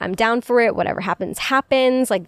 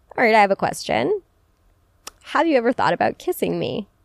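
cute, playful, fun, flirty tone. Showing how to ask the question one-on-one: fun, cute, flirty tone. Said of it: "a very fun, cute, flirty way".

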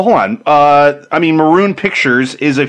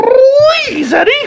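put-on cartoon rabbit voice, much higher and louder; 4 dB louder than usual. Asked during a round of impressions to do one, obliging; Roger Rabbit voice. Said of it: "can you do a Roger Rabbit?".

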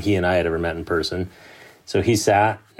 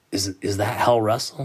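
hushed, voiced stage half-whisper; 3 semitones higher than usual. Retelling a quiet question about a newcomer: imitating Mike Hall half-whispering. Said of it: "he kinda whispers".

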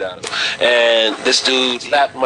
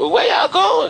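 put-on very high default girl voice. Voicing a girl traveling with a group, in a put-on girl voice. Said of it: "that's my default girl voice".

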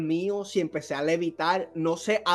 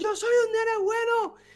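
put-on scream, much higher. Retelling how he started crying and screaming, retelling a scream. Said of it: "yo empiezo a gritar".

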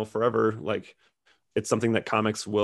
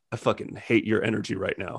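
put-on deadpan delivery. Recounting a man's remark to a silent crowd, imitating a deadpan delivery. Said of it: "he just deadpan".

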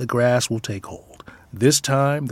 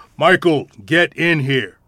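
put-on firm, raised, authoritative take-charge commanding tone; 3 semitones higher, 7 dB louder than usual. Retelling how they call Michael in from the stairs, in a mock-authoritative voice. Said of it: "in our most authoritative voice".

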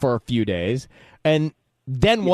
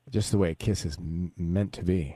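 soft, gentle, put-on tender voice; 9 semitones lower, 8 dB quieter than usual. Reacting to a description of a kiss: put-on tender voice. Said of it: "That's why I changed my voice".

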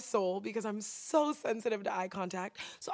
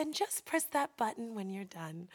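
put-on soft voice, quieter; 5 dB quieter than usual. Speaker retells an older woman's instruction to press the button, imitating her soft voice. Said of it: "she has a really soft voice".

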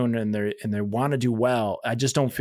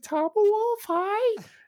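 put-on small child's little voice, much higher pitch. Retelling how a young kid greeted the speaker; imitating a young kid's little voice. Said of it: "He's like his little voice".

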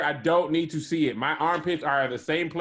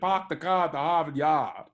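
playful, jokey put-on Boston accent. Teasing another speaker about how he says car, Boston accent. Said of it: "You sound like you're from Boston".

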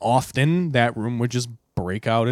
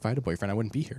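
mimicked mutter, much quieter, faster; 8 dB quieter than usual. Retelling what a man said as he got up into the hallway, imitating a muttered aside. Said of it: "he like under his breath is like".

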